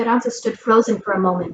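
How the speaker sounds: ordinary delivery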